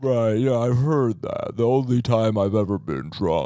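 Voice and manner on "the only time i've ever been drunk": put-on monster voice. Joking with co-hosts about sounding drunk, sounding like Frankenstein. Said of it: "You sound like Frankenstein".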